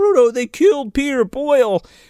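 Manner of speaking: mock scream, very high-pitched and shrieking. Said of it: "screams down and he's like".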